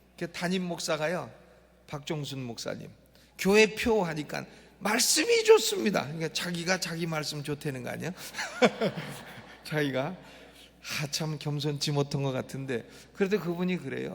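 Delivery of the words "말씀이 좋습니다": proud shout, belted out high and loud. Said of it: "소리를 지릅디다".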